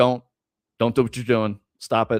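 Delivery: play-acted, serious, no-nonsense stern tone. Describing how they handle misbehaving kids, retelling a stern warning. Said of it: "I'll get stern and be like".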